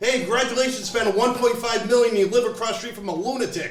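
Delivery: play-acted, high-pitched yelling. Retelling yelling at a driver who parked across four spots: retelling a yell. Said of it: "and then I yelled".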